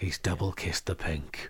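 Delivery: very low, hushed sports commentator murmur. Joking about the other speaker's prediction style: hushed snooker commentator voice. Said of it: "It's all sort of hushed tones".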